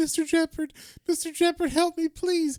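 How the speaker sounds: crying, pleading voice, very high. Retelling a comic scene where Sweet Tooth is dragged away: imitating Sweet Tooth crying. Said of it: "Sweet Tooth is crying. He's like".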